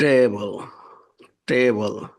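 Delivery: table with first-syllable stress.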